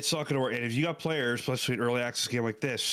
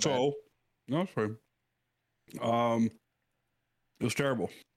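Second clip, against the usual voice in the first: talking while eating, mouth full. Answering a question about a game while eating a brownie: talking with mouth full. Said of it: "I got a brownie in my mouth".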